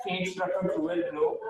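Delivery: ordinary talk, nothing marked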